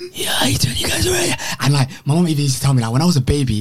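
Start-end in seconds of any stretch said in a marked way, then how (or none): 0.1-1.3 very high, husky, hoarse rasping voice. Showing how the voice sounded four years ago: imitating his old hoarse voice. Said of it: "It was so hoarse, like, it was like this".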